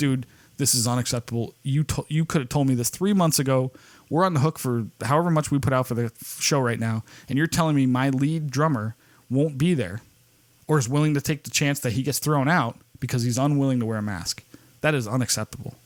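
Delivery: ordinary delivery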